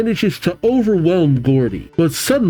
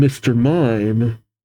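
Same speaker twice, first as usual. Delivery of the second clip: ordinary delivery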